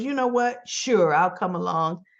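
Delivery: ordinary delivery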